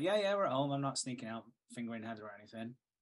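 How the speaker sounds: plain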